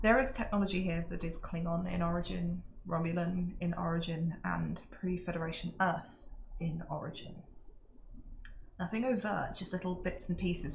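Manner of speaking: quiet, hushed mutter under the breath. Speaking in character to a companion at the back of a group: speaking quietly under breath. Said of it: "under my breath quietly".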